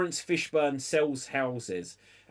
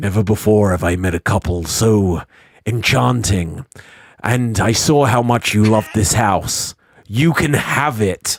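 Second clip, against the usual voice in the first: deep, booming narration voice with gravitas; 6 semitones lower, 12 dB louder than usual. Retelling a movie scene, narrating in Laurence Fishburne gravitas voice. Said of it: "he narrates with his great gravitas voice".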